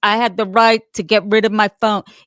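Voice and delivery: speaking up loudly. Quoting a man's words from a trial they watched, retelling in a loud voice. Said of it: "He's saying in a loud voice".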